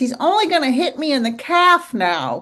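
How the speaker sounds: thin, high, squeaky, apologetic little voice. Quoting a line a man said, doing his voice: squeaky-voiced impression. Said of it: "You know how he has a squeaky voice?".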